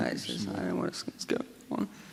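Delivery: voice giving out into a rough whisper. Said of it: "my voice seems to be going".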